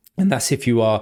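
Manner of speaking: voice cracking, slight break. Speaker talking to viewers about goalkeepers, voice crack. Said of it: "little voice crack there".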